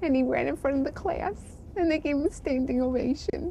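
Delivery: about to cry. Mother recalling her son's first day back at school, about to cry. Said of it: "now I'm gonna cry".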